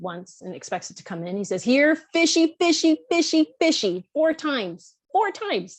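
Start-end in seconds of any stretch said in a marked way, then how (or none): 1.6-4.0 high-pitched, loud, friendly shout. Explaining how Ernie calls the fish in the lake, retelling Ernie's loud, friendly shout. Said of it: "He talks in a loud, friendly voice, uh, well, shouts really".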